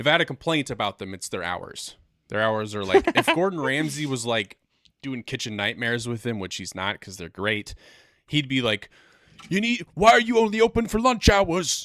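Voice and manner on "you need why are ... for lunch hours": put-on high-pitched, loud New York accent. Imagining Gordon Ramsay doing Kitchen Nightmares at this place: Gordon Ramsay impression, New York-sounding. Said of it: "I sounded more like New York there".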